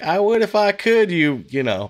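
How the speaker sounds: high cartoonish computer voice.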